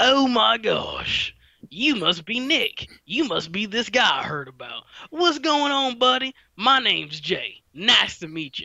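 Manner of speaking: put-on down-home country accent. Retelling how Jay first greeted Nick, in Jay's country accent. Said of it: "Jay has this very authentic country accent".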